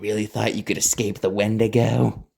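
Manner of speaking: whispering in a put-on creature voice. Reading a story aloud, the creature pounces on Vincent: whispering as the Wendigo. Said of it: "It then whispered in his ear".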